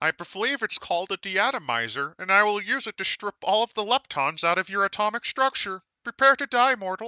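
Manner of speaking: high-pitched cartoon alien voice. Playing an alien invader with a ray gun: Marvin the Martian style voice. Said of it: "playing a Marvin the Martian style character".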